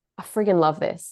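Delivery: put-on loud whisper. Retelling what a course leader said leaning across: imitating a loud whisper. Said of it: "whispering in the loud way that men whisper".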